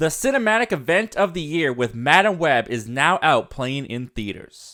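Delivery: ordinary talk, nothing marked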